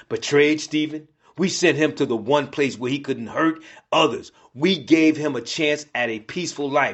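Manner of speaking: plain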